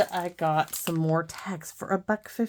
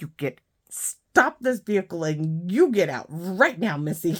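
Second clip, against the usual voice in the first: mock loud, heated, angry scolding tone; 5 dB louder than usual. Retelling ordering the driver to stop the vehicle, imitating arguing angrily. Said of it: "me and her are arguing".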